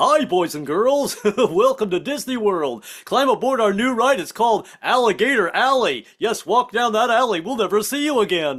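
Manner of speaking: silly, goofy cartoon character voice, pitched high. Joking that Goofy will greet visitors at the Disney World front gate, in a Goofy voice. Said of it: "Goofy will be at the front gate".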